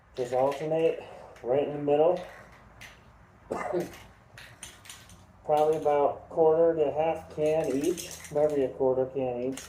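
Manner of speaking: speech through a respirator mask. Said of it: "Respirator on".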